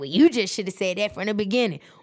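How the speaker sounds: indignant, affronted, fast, high offended tone. Retelling her own reply after a woman refused to pass on a message, mock-offended retort. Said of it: "So of course I get offended".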